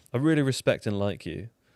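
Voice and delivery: ordinary talk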